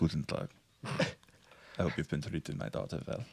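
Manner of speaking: put-on hushed, breathy, masculine voice with vaguely Austrian accent. A troll father addresses his daughter's companions in a masculine, vaguely Austrian voice. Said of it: "vaguely Austrian voice".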